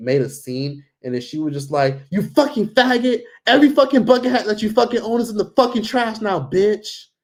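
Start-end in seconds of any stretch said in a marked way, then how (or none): 2.1-7.1 very high, screaming yelling, acted out. Retelling how she made a scene over stolen bucket hats, imitating someone yelling. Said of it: "Literally like just yelling".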